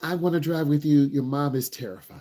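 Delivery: ordinary talk, nothing marked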